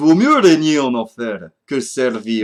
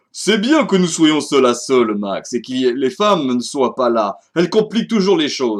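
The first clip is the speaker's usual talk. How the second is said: fake, put-on Russian accent over French. Voicing a villain's game line in French on stream, put-on Russian accent. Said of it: "désolé pour cet instant [name], j'ai perdu mon accent russe. / j'ai perdu mon accent russe. / j'ai perdu mon accent russe".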